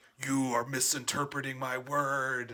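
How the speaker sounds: big booming voice. Retelling a childhood superhero fantasy, addressing fundamentalist Christians in a big booming voice. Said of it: "have a big booming voice be like".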